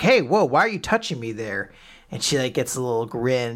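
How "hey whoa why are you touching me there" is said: put-on jumpy, flustered, nervous, startled tone. Retelling an anime scene where Weiss is touched: imitating nervous Weiss. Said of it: "Weiss is really nervous".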